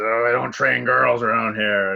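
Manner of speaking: loud, gruff delivery. Retelling a movie scene: gruff Clint Eastwood voice. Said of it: "in his gruff voice says".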